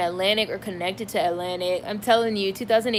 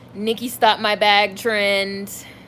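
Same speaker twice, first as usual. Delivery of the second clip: slow, mocking put-on hater voice. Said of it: "that's how I really imagine [name] haters sound".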